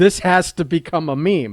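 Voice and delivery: ordinary talk, nothing marked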